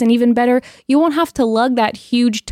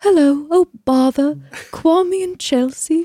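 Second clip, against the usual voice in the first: sweet, high, slow, precious-sounding storybook character voice; 5 semitones higher than usual. Imitating the dad's hello to Kwame and Chelsea in a Winnie the Pooh voice. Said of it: "He sounded almost kind of like Winnie the Pooh to me".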